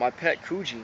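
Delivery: plain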